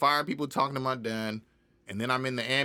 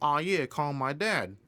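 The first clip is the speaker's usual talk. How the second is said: plain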